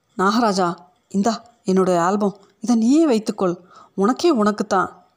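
usual speaking voice

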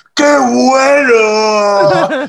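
loud, high yell stretching out the word "bueno". Retelling what a loud friend yelled: imitating a friend shouting. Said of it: "que grita".

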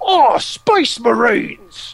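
put-on bad Cockney accent, high, loud. Retelling how the space orcs shout when charging: imitating orcs' horrible Cockney accent. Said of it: "space orcs speak with this horrible Cockney accent".

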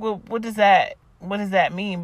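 usual speaking voice

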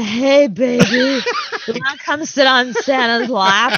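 mock drunken man voice. Retelling walking home past men in Santa suits: imitating a drunk guy in a Santa suit. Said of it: "drunk guys in Santa uniforms being like".

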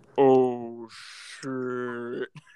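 super deep, very low-pitched voice. Retelling the reaction when the hit kicked in, in a super deep voice. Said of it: "in like a super deep voice".

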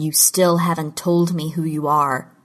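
plain

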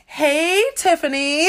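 put-on Californian accent. Retelling a phone call, imitating the person on the line in a California accent. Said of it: "an even better California accent".

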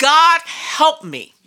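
screaming at top volume, high and desperate. Recounting screaming for help in a car: retelling a scream. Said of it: "scream at the top of my voice".

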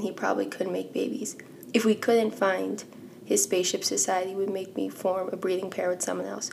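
ordinary talk

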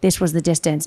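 quiet, confiding, hushed stage half-whisper. Retelling a partner half-whispering through an earpiece: imitating Ryan Reesbeck half-whispering. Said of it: "whispering in my ear and he's like".

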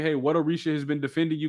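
normal talking voice

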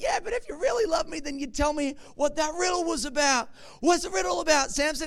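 high, wheedling, emotionally manipulative coaxing. Retelling a story, an emotionally manipulative woman presses a man: imitating a manipulative woman. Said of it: "emotionally manipulative lady".

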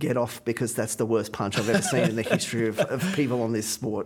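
plain

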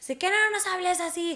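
play-acted high-pitched shouting. Retelling a fight with parents, imitating own past yelling. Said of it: "les grité".

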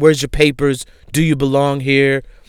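ordinary delivery

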